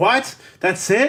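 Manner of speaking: loud, high-pitched shouting. Speaker recalls a movie's ending watched on television, retelling own yelling. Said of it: "Like I was yelling".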